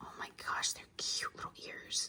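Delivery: hushed whisper, barely audible. The speaker talks directly to the Labubus, whispering. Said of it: "I'm now whispering to the Labubos".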